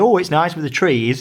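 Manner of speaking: ordinary talk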